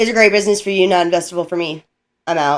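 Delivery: low, flat, monotone deadpan, said on autopilot. Retelling how he turned down a business, imitating a monotone deadpan. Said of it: "he said it so monotone".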